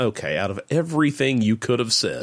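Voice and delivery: ordinary talk, nothing marked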